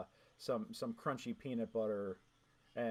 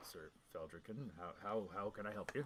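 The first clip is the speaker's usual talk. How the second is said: half-orc character voice; 2 semitones lower, 6 dB quieter than usual. Voicing a one-eyed half-orc opening an orphanage door: voicing Patch the half-orc. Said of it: "The, the one-eyed half-orc".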